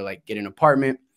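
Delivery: ordinary delivery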